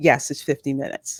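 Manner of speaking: mock condescending tone. Retelling a cast member's answer to a waiting couple, mock-condescending tone. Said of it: "in the most condescending tone that I have ever heard".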